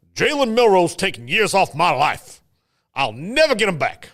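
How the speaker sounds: put-on Southern Alabama accent. Reading out messages, best Alabama accent. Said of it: "in my best Alabama accent".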